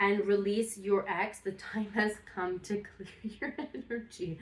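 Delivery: giggly, amused voice, laughing through the words. Reading tarot advice aloud for Sagittarius: laughing while talking. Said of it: "I'm laughing because of her her sound".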